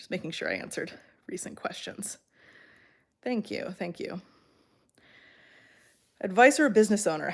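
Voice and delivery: short of breath, breathless. Answering viewers' questions late in pregnancy, out of breath. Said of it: "don't mind me if I sound out of breath".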